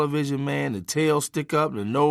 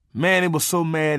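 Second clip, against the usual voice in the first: normal talking voice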